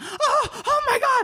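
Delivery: very high, breathy, startled panicked gasp.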